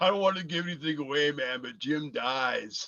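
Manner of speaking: put-on drunk man voice. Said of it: "drunk as a skunk".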